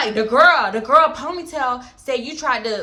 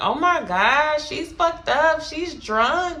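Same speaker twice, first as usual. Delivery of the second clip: slow, mocking jeer through snickers; 3 semitones higher than usual. Quoting two girls who were laughing about her outside, imitating someone snickering. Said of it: "like snickering".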